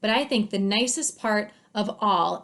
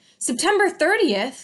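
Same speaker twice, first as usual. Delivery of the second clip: eager, worked-up, excited raised voice; 8 semitones higher, 5 dB louder than usual. Narrator reading Mister Popper's reply when the date is mentioned, excited tone. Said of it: "said Mister Popper in an excited tone".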